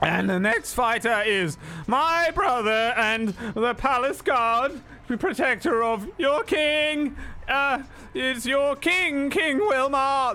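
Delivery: loud announcer voice.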